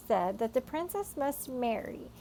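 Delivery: ordinary delivery, nothing marked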